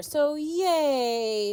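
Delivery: mock-cheerful sarcastic yay, high and drawn out. Reacting to news of a forecast ice storm: sarcastic cheer. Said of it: "I'm so sarcastic with that".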